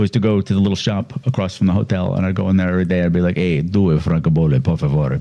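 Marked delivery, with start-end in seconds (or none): 3.4-5.2 put-on slow Italian accent, savoured for its sound. Retelling asking for stamps at a shop in Rome: Italian accent. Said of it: "I can't do an Italian accent".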